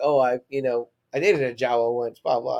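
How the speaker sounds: ordinary delivery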